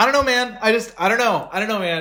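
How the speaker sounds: put-on exasperation. Showing how the speaker talks at an emotional limit, acting really frustrated and angry. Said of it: "when I get really frustrated and really angry".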